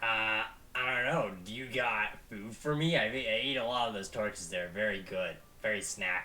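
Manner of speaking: low, soft little goblin creature voice. In a role-play, a player voices a little fire guy answering a request: goblin voice. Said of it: "I think I just used goblin voice for me".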